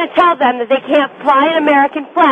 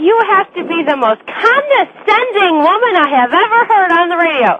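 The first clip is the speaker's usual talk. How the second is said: heated, riled, worked-up, laying-into tone; 3 semitones higher than usual. Caller on a radio show confronting the host, heated. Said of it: "calm down".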